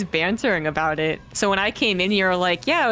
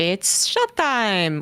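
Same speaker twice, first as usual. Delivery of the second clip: put-on Japanese anime accent. Retelling the opening line of an anime film: Japanese accent from Paprika. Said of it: "And he goes".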